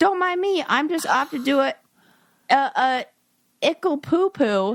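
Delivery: put-on sweet, little, cutesy baby talk voice. Speaker reacting to an article, acting it out in a cutesy baby voice. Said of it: "she speaks in a baby voice to make it sound cute".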